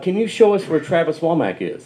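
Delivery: terrible, badly put-on British accent. A drummer quotes people who approached him after playing: terrible British accent. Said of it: "I have a terrible British accent".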